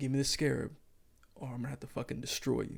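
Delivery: calm, menacing tone. Retelling a villain's line from the episode: imitating Ethan Hawke's calm menacing delivery. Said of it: "he calmly delivers these lines like".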